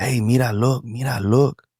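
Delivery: slow, teasing, taunting call. Retelling how Mexican kids taunted in a stand-up bit: imitating Mexican kids taunting. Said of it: "the Mexicans would be like".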